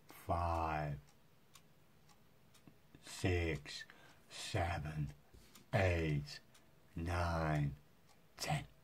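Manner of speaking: slow, stretched speech. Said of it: "a little bit slower".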